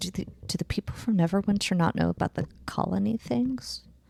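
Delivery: stage whisper aside. Player voicing Jean-Luc, leaning over to Legato, Jean-Luc's stage whisper. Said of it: "in a stage whisper".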